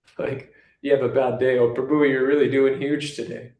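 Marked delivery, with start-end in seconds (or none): none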